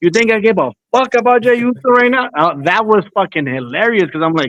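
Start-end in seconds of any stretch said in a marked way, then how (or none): 0.0-2.3 mock, high-pitched, all-out raised screaming. Retelling how a streamer reacted to a home run: imitating someone screaming. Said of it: "he starts screaming".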